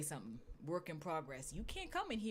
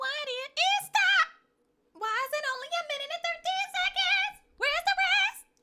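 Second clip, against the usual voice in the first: shrill, very high, very loud voice, rising; 11 dB louder than usual. Performing a line recorded in the studio, in a very high voice. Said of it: "your voice got up that high".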